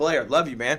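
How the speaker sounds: mock choked up, playfully pretend teary. Praising another team's defense, addressing a friend, mock choked up. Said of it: "I'm getting choked up".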